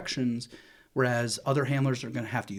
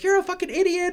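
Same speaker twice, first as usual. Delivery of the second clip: mock screaming, very high-pitched and shrill; 5 dB louder than usual. Speaker acting out a man yelling at him over a dog, retelling a scream. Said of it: "He's screaming at me".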